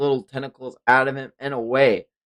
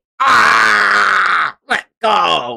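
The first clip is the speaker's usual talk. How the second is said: high, rough monster shriek with a long ah; 7 semitones higher, 8 dB louder than usual. Narrating a fight, the speaker voices the monster as a man grabs its tentacle: screaming creature. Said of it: "the creature starts screaming".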